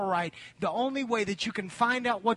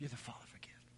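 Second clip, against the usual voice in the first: soft, unvoiced whisper, breathed out. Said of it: "he's saying".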